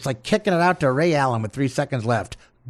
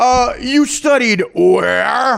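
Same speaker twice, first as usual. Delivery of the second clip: very high, very slow, drawn-out sarcasm swinging up on "where"; 9 semitones higher, 7 dB louder than usual. Imitating a sarcastic line, voice going up at the end: imitating Matthew Perry's sarcastic rising tone. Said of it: "his voice goes up at the end, dictating sarcasm".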